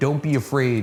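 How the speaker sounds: usual speaking voice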